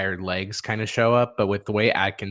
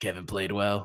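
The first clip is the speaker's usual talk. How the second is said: put-on raspy smoker's voice, quieter; 5 dB quieter than usual. Imitating how Steve Nash speaks: raspy Steve Nash voice. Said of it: "a cigarette raspy voice".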